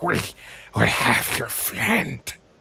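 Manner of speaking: halting, very broken, guttural, sputtering speech, rough. Game master voicing a desperate mage speaking to Corvin, broken, sputtering common tongue. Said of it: "in very very broken common tongue".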